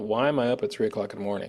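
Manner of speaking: ordinary delivery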